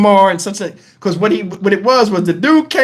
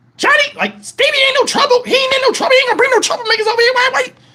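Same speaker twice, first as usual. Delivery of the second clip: put-on very high, heated, angry rant. Retelling a family argument at home: imitating Bunny going off. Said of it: "She's going off on him".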